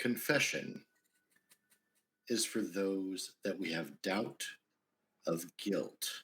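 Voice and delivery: icy, chilling, cold, detached voice. As Helicoprion, speaking over his shoulder to the battle sister, in a cold, flat voice. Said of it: "In a cold, flat voice".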